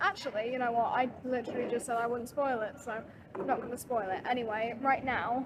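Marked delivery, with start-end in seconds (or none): none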